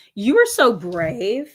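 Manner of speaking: slow, condescending, passive-aggressive superiority. Someone remarks on what you chose to wear, with passive-aggressive superiority. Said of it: "passive aggressive superiority".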